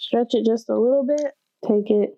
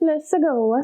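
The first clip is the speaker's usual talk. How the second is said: high, pitched-up video game hero voice; 6 semitones higher than usual. A cook putting dough in the fridge breaks into a Mario impression. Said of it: "That was a Mario impression".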